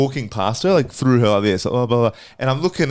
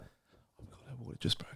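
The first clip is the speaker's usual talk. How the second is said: hushed whisper; 22 dB quieter than usual. Retelling how news passed down the table: imitating whispering. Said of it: "you could hear the whispers go down the table like this".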